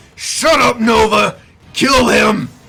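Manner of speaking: booming, loud, drawn-out high shout. Game master voicing Otakimaru calling out to Nova mid-fight, shouting. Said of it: "Otakimaru shouts out".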